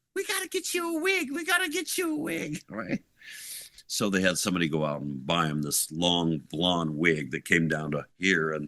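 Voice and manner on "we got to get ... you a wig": mock screaming, pitched higher. Retelling how Sharon reacted to the shaved head: imitating Sharon screaming. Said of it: "Sharon, like, screaming".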